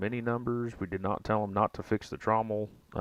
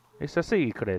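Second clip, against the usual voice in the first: put-on French accent sounding Italian, higher and slower; 4 semitones higher than usual. Asked if that was a French impression, the speaker answers, French impression sounding Italian. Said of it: "that's more Italian".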